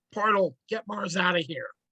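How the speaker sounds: called-out line, moderate volume. Playing a character, yelling to Portal to get Mars out: yelling. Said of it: "and I'm gonna yell".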